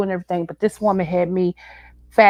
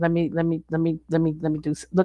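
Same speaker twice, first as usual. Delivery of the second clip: soft, tripping stutter repeating "let me"; 3 semitones lower, 7 dB quieter than usual. Getting ready to share something with the audience, stuttering. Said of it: "I'm stuttering".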